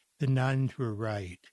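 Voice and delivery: gentle, soft delivery after a pause. Retelling the answer given to audiences about blindness: soft voice. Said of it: "lower my eyes and say in a soft voice".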